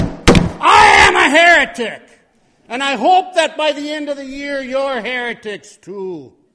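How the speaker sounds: booming, resonant shout.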